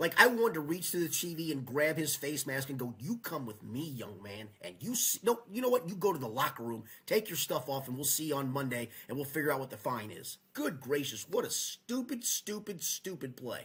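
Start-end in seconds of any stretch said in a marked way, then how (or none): 3.0-10.4 mock stern, angry scolding tone. Acting out what to say to a player seen on TV: imitating angry scolding. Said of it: "I was so mad".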